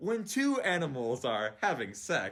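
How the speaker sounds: very slow, drawn-out delivery.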